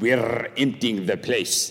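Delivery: spoken in a put-on Welsh accent. Retelling Lloyd-Jones's answer about Westminster Chapel, in his Welsh accent. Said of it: "in his Welsh accent".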